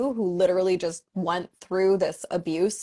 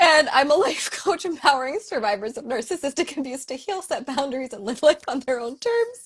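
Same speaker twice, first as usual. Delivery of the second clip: giggling through words, higher; 7 semitones higher than usual. Introducing herself on a live chat, laughing while talking. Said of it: "I can't stop laughing right now".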